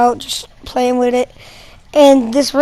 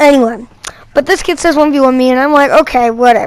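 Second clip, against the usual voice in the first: normal talking voice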